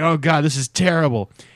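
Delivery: effortful grunted groan. Retelling a comic scene of a hitman in a restroom, imitating someone grunting. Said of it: "he's grunting".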